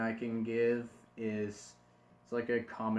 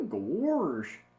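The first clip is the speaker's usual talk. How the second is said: gosh drawn out long, high-pitched and loud; 7 semitones higher, 5 dB louder than usual. Showing a learner phrases to practice in the voice: Goofy voice. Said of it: "stuff that Goofy says".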